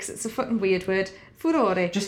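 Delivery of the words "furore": furore pronounced with Italian pronunciation. Settling how to pronounce a word, 'furore' said the italian way. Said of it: "Let's just do it in the Italian way".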